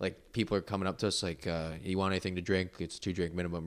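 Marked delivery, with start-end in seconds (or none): none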